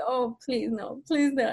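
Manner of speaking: acted frantic, desperate pleading, near breaking. Retelling a dance class where the instructor sped up: imitating own past pleading. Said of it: "having a, a mental breakdown".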